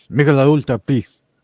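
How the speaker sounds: put-on loud, belted, thick Argentinian accent. Retelling a beer ad, doing Messi's line in his thick Argentinian accent. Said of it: "he said it with his thick Argentinian accent".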